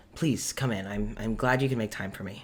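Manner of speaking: put-on soft welcoming voice. Retelling a scene at Gideon's door, imitating Gideon, soft and welcoming. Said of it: "very sincere, very welcoming, very soft".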